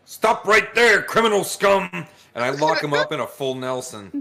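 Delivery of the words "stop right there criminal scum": loud, high-pitched yell. A player voicing Beryl, asked if Beryl says anything, yelling. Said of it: "As soon as you yell that".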